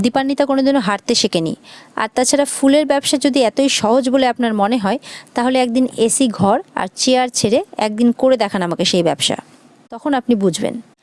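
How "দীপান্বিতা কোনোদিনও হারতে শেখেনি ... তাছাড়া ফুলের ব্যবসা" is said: ordinary delivery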